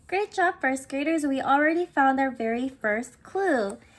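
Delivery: plain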